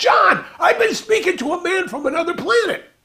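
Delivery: put-on very high, excited, all worked-up gush. Retelling how the roommate announced news from another planet: imitating Norma all excited. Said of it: "all excited".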